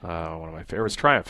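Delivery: plain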